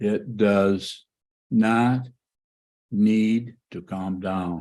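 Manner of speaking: very slow, halting, word by word, broken up. Answering a question about calming down, very slow speech. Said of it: "I'll say this very slowly".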